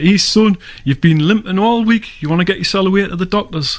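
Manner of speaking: put-on Geordie accent. Retelling what an old lady said about his limping: Geordie accent. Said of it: "in a Geordie accent".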